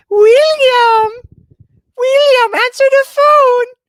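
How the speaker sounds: very high, loud, drawn-out cartoon voice. Recalling a funny voicemail someone once left, Mort voice. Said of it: "Was I trying to sound like Mort?".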